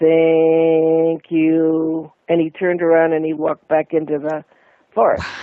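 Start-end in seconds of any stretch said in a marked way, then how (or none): 0.0-2.1 very robotic, flat, machine-like, "you" drawn out. Retelling what a being in the forest said before walking away, in a robotic voice. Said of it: "he said in a robotic voice, very robotic".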